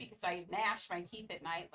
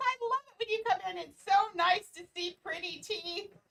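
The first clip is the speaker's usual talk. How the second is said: put-on excited voice, higher and louder; 9 semitones higher, 6 dB louder than usual. Retelling how the dentist greeted each visit: imitating an excited dentist. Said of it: "so excited over my teeth".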